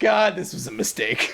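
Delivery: rueful, second-guessing, regretful aside. Acting out the bride regretting her wedding: imitating a regretful bride. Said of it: "She's just sitting there like".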